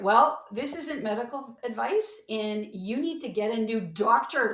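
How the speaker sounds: loud, emphatic, urgent delivery.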